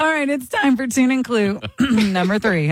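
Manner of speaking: voice breaking and cracking. Host announcing the next round of the music quiz, voice cracking. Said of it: "as my voice cracks".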